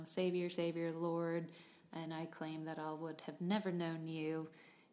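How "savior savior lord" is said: ordinary talk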